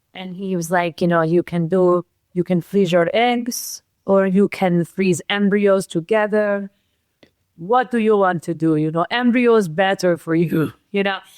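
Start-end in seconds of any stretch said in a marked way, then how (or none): 1.2-11.1 put-on heavy European accent, laid on thick. A speaker quoting what a man told her and James; thick European accent. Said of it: "he has this very thick European accent".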